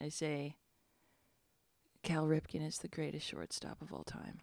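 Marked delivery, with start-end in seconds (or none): 2.0-4.4 muttered whisper under breath, quieter. Playing a character getting up after falling, whispering under breath. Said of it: "I start whispering under my breath".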